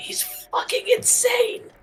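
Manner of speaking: slow whisper, high-pitched. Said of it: "I'm just gonna whisper to Adam".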